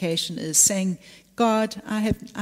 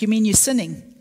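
put-on playful, tongue-in-cheek teasing; 4 dB louder than usual. Recall answering a worried man in the office one day, retelling a tongue-in-cheek tease. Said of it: "I was teasing him".

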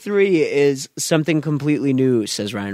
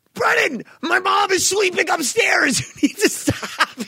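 very high, fed-up, mad scolding outburst. Retelling a sleepover where Ryan scolded Brendan over phone noise, imitating Ryan getting mad. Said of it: "Ryan got so mad".

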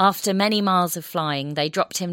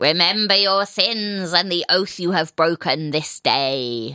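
horrible grating creature rasp, "day" stretched. A narrator voices griffin-like creatures calling out to a man, in a horrible rasping voice. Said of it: "the voice was horrible and rasping".

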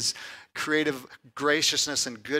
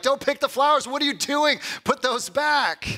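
mock very high, riled-up, angry scolding yell; 11 semitones higher, 4 dB louder than usual. Retelling how a man yelled at a young girl, imitating an angry yell. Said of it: "he's like yelling at this like 7 and 8 year old girl".

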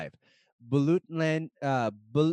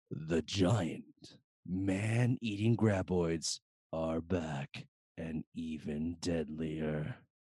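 movie trailer announcer voice, lower and quieter; 9 semitones lower, 7 dB quieter than usual. Reading a movie's tagline aloud to the group: movie trailer voice. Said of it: "should I do it a movie voice".

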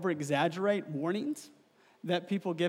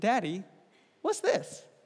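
put-on tiny, small toddler voice, sing-song. A father retells his son calling out to him, in a tiny three-year-old voice. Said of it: "in this tiny three-year-old voice".

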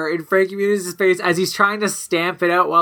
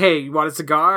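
normal talking voice

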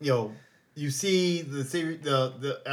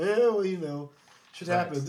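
ordinary talk

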